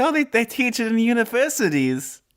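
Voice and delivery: put-on Australian or Southern accent. Retelling what a friend's mom said, imitating her accent. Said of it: "is that an Australian accent or a Southern accent for my mom that you're doing?".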